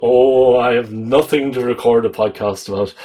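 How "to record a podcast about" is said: ordinary talk, nothing marked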